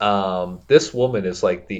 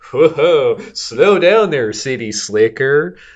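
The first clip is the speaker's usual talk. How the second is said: put-on mocking condescension, higher, louder, slower; 7 semitones higher, 7 dB louder than usual. Retelling how people answered a man wanting a missing person report, mock condescending tone. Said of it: "they're very like mocking and condescending of him".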